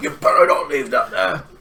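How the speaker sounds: put-on slightly elderly woman's voice. Speaker retells what an elderly woman said to them: imitating an old woman's voice. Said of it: "so it was more old woman voice".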